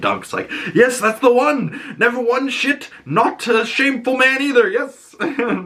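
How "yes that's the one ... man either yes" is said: overjoyed, happy, elated outburst. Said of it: "He's so happy that somebody remembered him".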